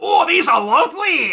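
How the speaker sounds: very high, very loud, slow, drawn-out cartoon drawl. Acting out a cartoon duck picking up coins: Scrooge McDuck voice. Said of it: "Scrooge McDuck picked them up and was like".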